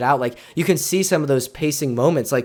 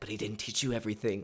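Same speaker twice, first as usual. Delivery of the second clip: soft, low, hushed half-whisper; 4 semitones lower, 15 dB quieter than usual. Retelling a favorite movie moment that gave chills, in a retold half-whisper. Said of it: "and then he like whispers like".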